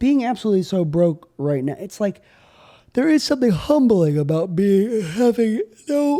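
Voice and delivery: speaking through yawns. After chugging a bottle of NyQuil, yawning while talking. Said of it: "I keep yawning".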